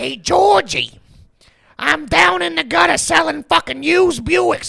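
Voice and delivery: put-on very high-pitched New Jersey salesman accent. Mocking a film voice that did not scare you, Skarsgård's It accent, Jersey salesman. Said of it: "like Jersey used car salesman".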